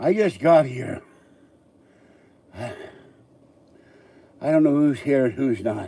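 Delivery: loud, high, winded, out-of-breath voice. Speaker has just arrived and starts talking, out of breath. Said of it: "I'm very out of breath".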